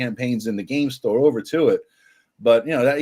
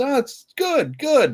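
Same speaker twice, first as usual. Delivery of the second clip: very high, very slow, drawn-out insincere voice; 12 semitones higher than usual. Retelling a game store kid's answer about sales, imitating Rob's high-pitched lying voice. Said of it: "with that high pitched, I'm kind of lying through my ass kind of voice".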